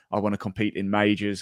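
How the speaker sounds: ordinary talk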